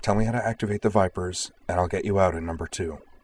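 plain reading voice

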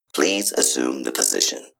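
implacable, unyielding synthetic machine voice. One of the robots speaks on the battlefield, implacable synthetic voice. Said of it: "said one of the robots in an implacable synthetic voice".

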